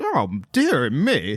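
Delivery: put-on genteel Southern lady accent. Describing an old lady character, the speaker uses a debonair southern lady voice. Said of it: "She's like a debonair Southern".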